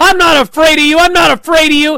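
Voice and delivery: piercing shriek, very high-pitched and very loud. Retelling a wrestling match where Thea runs over to Ava, imitating someone screaming. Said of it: "starts screaming at Ava".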